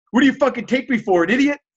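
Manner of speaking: high-pitched screaming, yelled right up close. Retelling how a guy started screaming in his face, imitating a man screaming. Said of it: "He starts screaming at my face".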